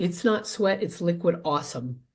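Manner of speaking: ordinary delivery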